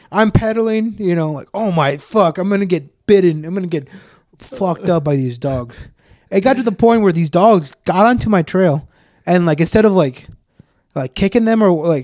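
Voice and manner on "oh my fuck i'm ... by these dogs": ordinary talk, nothing marked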